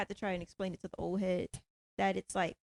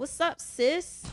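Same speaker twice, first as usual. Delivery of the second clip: mocking put-on borrowed slang, higher and louder; 8 semitones higher, 6 dB louder than usual. Retelling how some coworkers greet her: imitating coworkers trying to talk like her. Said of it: "you don't have to try and talk like me".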